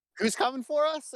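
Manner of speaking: put-on frantic panicked old-man cry, pitched way up. A game narrator voices an old man pulling a knife on a guard, freaking out. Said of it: "he's like freaking out and he's like".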